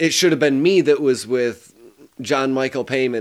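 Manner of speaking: ordinary delivery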